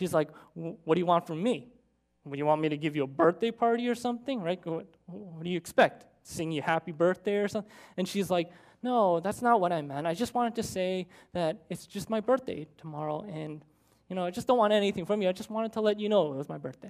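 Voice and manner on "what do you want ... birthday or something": mock-nasty, snide tone. Retelling how a woman's friend answered her birthday news, mimicking a nasty tone. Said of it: "responded in this nasty tone".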